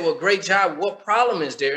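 ordinary talk, nothing marked

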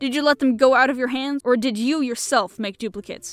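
sharp, snapped. Seeing the other man go pale, the questioner snaps at him. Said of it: "He snapped".

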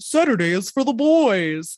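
weird, goofy, silly put-on voice. Recalling a funny old recording, speaker repeats their own phrase: weird, goofy voice. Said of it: "in that weird, goofy voice".

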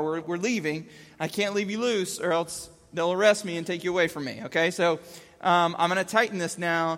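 ordinary delivery

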